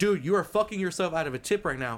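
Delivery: play-acted, heated, angry yell. Retelling how a man yelled at them over a tip, retelling an angry yell. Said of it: "He yells at me".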